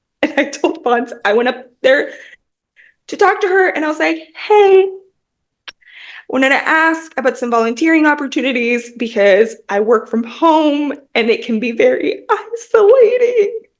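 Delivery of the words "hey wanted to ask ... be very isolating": tearful voice, cracking and breaking, near tears. Retelling asking a librarian about volunteering: imitating own voice cracking. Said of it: "And my voice cracked".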